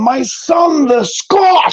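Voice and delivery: put-on heavy Polish accent. Retelling what his dad said walking up to him, in a thick Russian-Polish accent. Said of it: "really thick, like Russian, Polishy type accent".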